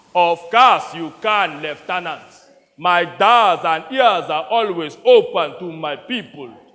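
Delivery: put-on Nigerian accent. Retelling how a fellow player answered as the general, in a put-on Nigerian warlord accent. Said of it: "in his best impression of an African warlord".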